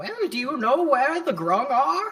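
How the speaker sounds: very high, swooping put-on old woman voice. A role-play player disguising their voice from a character, in an old lady voice. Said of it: "Just the old lady we're bringing".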